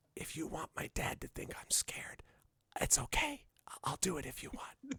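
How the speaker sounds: very quiet, half-audible whispered stage whisper. Retelling a girl whispering to Matthew, retelling a stage whisper. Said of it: "she whispers like stage whispers and says".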